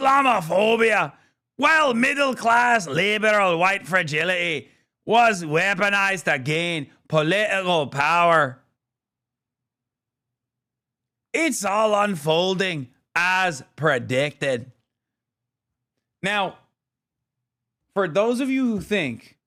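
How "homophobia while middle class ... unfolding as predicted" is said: put-on Israeli accent. Mocking a commentator's words: Israeli accent impression of E Fartlow. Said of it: "homegrown Israeli accent".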